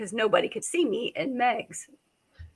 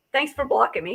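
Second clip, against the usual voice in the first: plain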